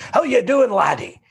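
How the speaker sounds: broad Scottish brogue. Retelling how Ross Mackay crossed the street to greet him, in his big Scottish brogue. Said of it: "that big Scottish brogue of his".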